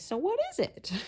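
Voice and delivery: very high, put-on kitty cat voice. Retelling what two friends said in science class after a complicated explanation, put-on cat voice. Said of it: "in a cat voice say".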